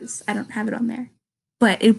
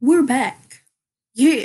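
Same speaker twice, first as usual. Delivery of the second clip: sounds like a surf dude; 2 semitones higher, 4 dB louder than usual. Coming back after a sponsor read for audible.com: surfer dude voice. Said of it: "Why do I sound like a surf dude?".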